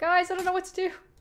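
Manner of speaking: shrill, very loud, high, panicked cry. Stuck in a game and unsure what to do: panicking. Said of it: "I'm panicking, I'm panicking".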